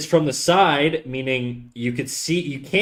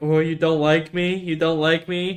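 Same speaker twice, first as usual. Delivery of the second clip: mock sorrowful, moping, sad wolf voice; 3 semitones higher than usual. Acting out a story, voicing the wolf looking back, imitating a sad wolf. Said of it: "the wolf's looking back at him all sad".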